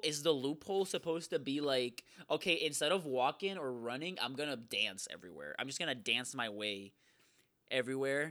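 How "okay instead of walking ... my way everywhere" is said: plain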